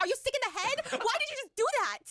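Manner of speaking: very high, shocked, shrieked outburst. Retelling a woman's reaction when a man hands her a rose: imitating her screaming. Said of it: "she's screaming like".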